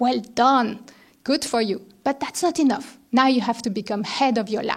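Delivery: put-on German accent. Retelling what a senior lab colleague said to her, German accent. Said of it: "she told me with her German accent".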